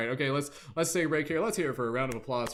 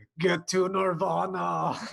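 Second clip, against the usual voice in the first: loud, rough movie-star bark; 7 semitones higher, 5 dB louder than usual. Imagining a spiritual life coach for a group, giving an Arnold Schwarzenegger impression. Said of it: "doing their Schwarzenegger impersonation".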